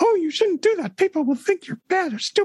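tiny, very high-pitched cartoon mouse voice. Showing how to voice the inner critic: Mickey Mouse voice. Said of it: "I love the Mickey Mouse voice thing".

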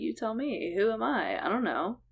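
weird, gentle, soft, sweet, hushed, unthreatened voice. Retelling how a man answered when asked who he was, imitating David Berkowitz's soft, sweet voice. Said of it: "like this weird, like, soft, sweet".

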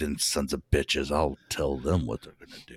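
fake angry cussing under breath. Imagining a guideline writer typing late at night: imitating someone cussing under his breath. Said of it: "cussing under his breath while he was typing it".

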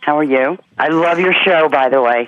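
glad, cheerful, friendly chatter. A caller greets a radio host and praises the show, sounding happy. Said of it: "You sound happy".

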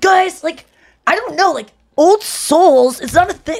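very high, slow, unhurried, drawn-out musing voice. Retelling a friend's impression of the speaker: imitating an impression of the speaker. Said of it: "I'm working on an impression of you".

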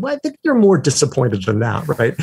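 ordinary delivery

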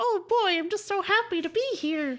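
very high, loud, put-on young teenage voice. Imagining an 18-year-old arriving at someone's door, the speaker uses an 18-year-old voice. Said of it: "This is my 18 year old voice".

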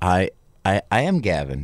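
ordinary delivery

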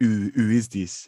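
terrible, bad put-on French accent. Retelling a French person's question about a band: terrible French accent. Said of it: "I won't do that terrible accent again".

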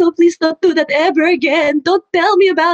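high, tearful mock crying, pleading tone. Speaker recounts mother's reaction to watching Muay Thai, imitating her crying. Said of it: "I'm like crying".

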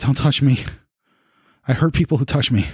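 startled, caught-off-guard tone. Narrator voices a character reacting to the player's action, startled. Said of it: "he's startled at that".

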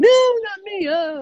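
put-on very high, babyish crying wail. Retelling how Phil refused to go on stage: mock crying like a baby. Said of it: "he was in the background crying like a baby, going".

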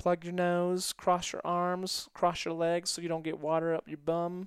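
sweet, cute, high southern drawl. Retelling a woman's answer when asked for tips: cute southern drawl. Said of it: "really cute southern drawl".

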